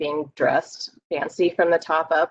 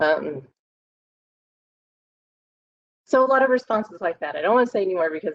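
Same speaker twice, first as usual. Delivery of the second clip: tearful, crying while speaking; 3 semitones higher than usual. Sharing responses from group members, crying. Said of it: "I am now embarrassed because I'm crying".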